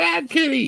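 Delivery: shouting. Voicing a character scolding the cat for marking the couch: yelling. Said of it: "and Maris yells at the cat".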